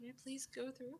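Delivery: very quiet, barely audible half-whisper. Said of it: "and whisper".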